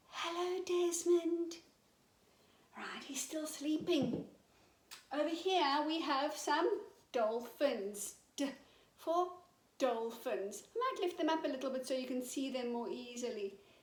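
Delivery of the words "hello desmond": quiet whisper, higher. Greeting a sleeping toy dragon without waking him: whispering. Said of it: "Shall we whisper quietly?".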